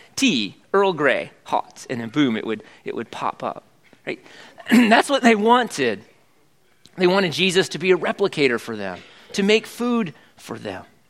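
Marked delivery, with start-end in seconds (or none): 0.2-1.9 put-on poor English accent, spoken slowly. Quoting how Captain Picard ordered from the replicator, bad Captain Picard English accent. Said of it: "That's not my very good English accent".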